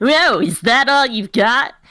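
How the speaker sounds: high cartoon video-game hedgehog hero voice. Suggesting to the narrator a voice for his character: Sonic the Hedgehog voice. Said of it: "like a Sonic the Hedgehog voice".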